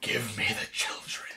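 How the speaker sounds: demonic voice in a very quiet hushed whisper. Recapping a Digimon episode, retelling Leomon's line, satanic Leomon voice. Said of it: "in the most satanic voice he can do".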